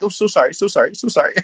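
put-on very high Canadian accent, profusely apologetic tone. Describing Canadians, imitating an apologetic Canadian. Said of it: "the apologetic apologetic Canadian that's like".

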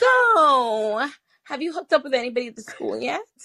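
high voice, stretched so. Retelling a first-week law school question from a classmate: imitating how she talks. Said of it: "and this is how she talks".

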